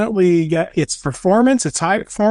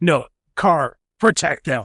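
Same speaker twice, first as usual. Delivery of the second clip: extra gravelly heroic voice; 3 semitones lower than usual. Retelling a show character's parting line, Batman voice. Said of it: "oh, that was in the Batman voice".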